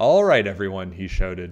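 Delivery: ordinary delivery, nothing marked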